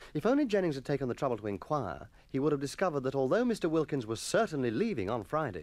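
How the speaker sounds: ordinary delivery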